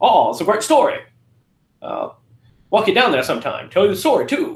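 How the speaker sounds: put-on heavy Maine accent with sing-song swoops. Recapping a movie scene, quoting Judd in Judd's Maine accent. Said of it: "That's a great main accent".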